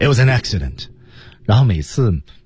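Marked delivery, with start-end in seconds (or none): none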